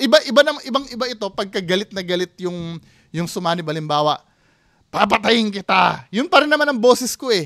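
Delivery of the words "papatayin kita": furious, menacing, angry, rough delivery. Example of a possessed person speaking in anger: angry voice. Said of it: "Pero galit lang yung boses".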